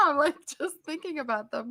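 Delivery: talking through tears, pitched high. Thinking about the people who asked if the speaker would cry, crying. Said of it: "I'm crying now".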